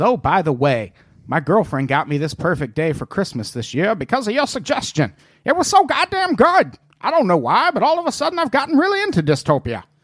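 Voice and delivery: swooping cartoon puppet voice. Reading out Clarence Faulkner's message, Muppet voice as Clarence Faulkner. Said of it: "Why'd you Muppet voice that?".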